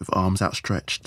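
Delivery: ordinary delivery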